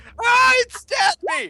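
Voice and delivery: acted, put-on screaming in pain. Voicing a stabbed man in the game: acted screaming in pain. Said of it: "if he's screaming".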